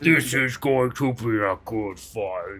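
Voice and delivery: big resounding voice. Repeating the character's line, in a booming voice. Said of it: "My voice just booms".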